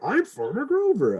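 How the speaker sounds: very high-pitched puppet voice. Describing a children's board book, the speaker quotes its character in a Grover voice. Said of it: "I'm just putting on the voice".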